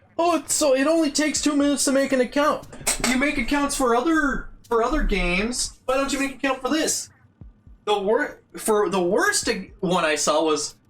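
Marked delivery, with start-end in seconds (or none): 0.2-7.1 high, dismissive, mocking tone. Retelling what dismissive commenters said about making an account: mocking imitation of online commenters. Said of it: "absolute brainlets being like".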